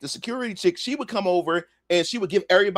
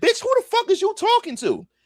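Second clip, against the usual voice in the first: very high, sassy, smart-mouthed, mouthy retort tone. Retelling his own reply to a rude woman: imitating own smart-mouthed retort. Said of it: "I'm getting smart with her".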